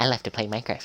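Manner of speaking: squeaky put-on voice. Recalling a summer spent in Minecraft, the speaker switches to a squeaky voice. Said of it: "squeaky voice".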